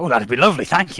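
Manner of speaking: sudden switch to pleasant, polite tone. In character after being offered breakfast: suddenly changed pleasant demeanor. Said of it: "Demeanor changes entirely".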